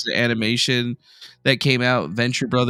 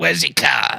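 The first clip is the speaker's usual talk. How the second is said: put-on, imitated thick New York accent; 5 semitones higher than usual.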